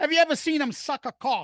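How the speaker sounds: put-on very thick British accent, high. Quoting what a guy asked about someone, in a thick British accent. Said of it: "wicked thick British accent".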